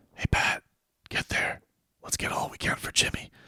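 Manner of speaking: hushed, confiding whisper close and low. Showing how a sports rumour sounds: put-on sports whisper. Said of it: "the sports whisper would be".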